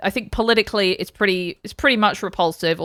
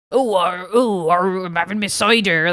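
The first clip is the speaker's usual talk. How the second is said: slow, put-on West Country local's accent. Asking Charlotte how people around her talked, in a put-on West Country accent. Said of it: "Was that how they talked".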